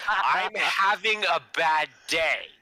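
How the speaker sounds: sudden, very loud, very high, drawn-out yell. Leaning close to a hungover man's ear as if to whisper, then yelling very loudly. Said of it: "and then I yell very loudly".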